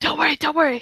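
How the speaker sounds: hushed whisper. Players sneaking past guards under an illusion: whispering. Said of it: "And we're like whispering".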